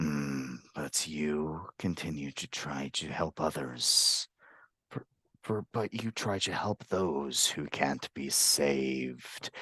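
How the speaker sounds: raspy lizard-creature monster voice. Narrator voices a shapeshifting lizard folk walking up to the listener, raspy voice. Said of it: "in that same raspy voice".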